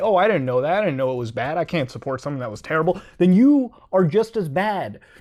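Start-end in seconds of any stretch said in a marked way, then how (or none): none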